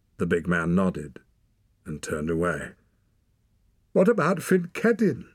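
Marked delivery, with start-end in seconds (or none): 4.0-5.2 piercing, shrill, very high-pitched voice. She asks the others about a wounded man, shrill. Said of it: "Ren said shrilly".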